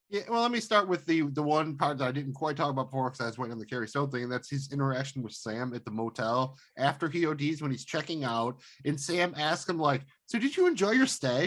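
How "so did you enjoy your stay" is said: sweet, earnest, pitched-up delivery. Retelling a character's question at motel checkout: imitating a nice, earnest question. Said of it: "all nice and earnestly".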